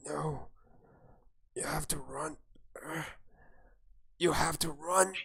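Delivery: scarcely heard, faint goblin voice. Narrator voicing a goblin as a character tries to sleep: barely audible goblin voice. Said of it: "You can barely hear him".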